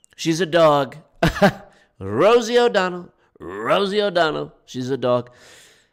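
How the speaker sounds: put-on raspy voice.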